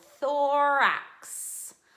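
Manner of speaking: thorax said slowly and drawn out. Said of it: "say it with me".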